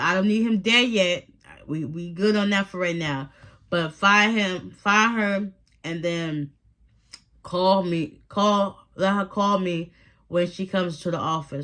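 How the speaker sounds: normal talking voice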